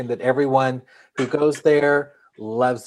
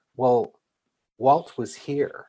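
slow, dry, flat deadpan delivery. Retelling what a woman at the Disney studios said back, imitating a deadpan reply. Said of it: "she just deadpan said".

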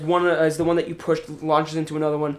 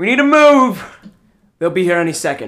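loud, raised shout; 2 semitones higher, 7 dB louder than usual. A narrator voices a man running toward the group as the train stops, shouting. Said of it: "he starts shouting".

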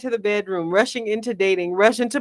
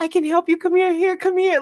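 put-on gentle, kindly, sweet, caring, pitched-up tone; 8 semitones higher than usual. Quoting the guy who offered to help, imitating a sweet, caring tone. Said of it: "he was super sweet".

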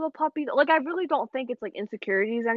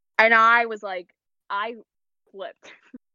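ordinary talk, nothing marked

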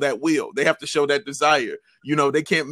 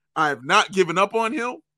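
plain

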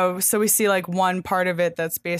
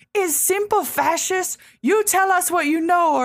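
mock piercing, very high screaming yell, demanding; 12 semitones higher, 4 dB louder than usual. Recounting an interrogation scene, act out the woman pointing at the prisoner: imitating a woman screaming. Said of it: "pointing her finger in his face and screaming like".

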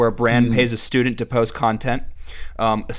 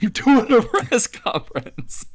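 put-on insistent, stretched, high, drawn-out yelling; 11 semitones higher than usual. Recalling a coach who kept yelling at a press conference: imitating Coach O yelling. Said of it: "he kept yelling".

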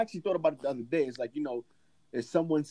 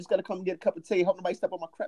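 quick put-on British accent, pitched up; 5 semitones higher than usual. Asked on a podcast to do a British accent, trying a British accent. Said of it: "I want to hear you do a British accent".

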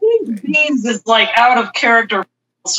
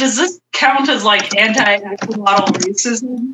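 ordinary delivery

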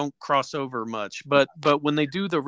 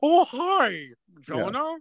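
put-on cartoony robot voice, higher; 10 semitones higher than usual. Mocking the new, jarringly different puppet voice: new Tom Servo voice. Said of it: "these voices are so jarringly different".

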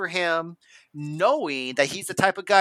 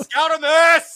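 full-on, shrill, very high and very loud yell; 11 semitones higher, 8 dB louder than usual. Speaker yelling into his microphone at his dog Scout, who is going nuts. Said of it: "I'm yelling into my microphone".

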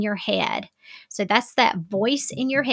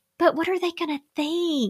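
whiny, anxious, high, fast, nervous voice; 7 semitones higher than usual. Describing her people-pleasing part, voicing its worries: mock-nervous whiny voice. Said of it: "she has a voice, and it's kind of whiny. And it's like".

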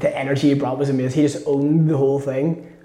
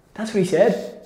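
ordinary delivery

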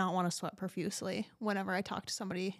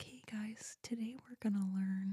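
mock whispering, quieter; 2 semitones higher, 6 dB quieter than usual. Imagining giving a class in the military, all whispered: pretend whisper. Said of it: "I'm just whispering the whole time".

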